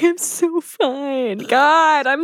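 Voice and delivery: very slow, high, drawn-out, weepy sobbing. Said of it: "we're always, like, sobbing".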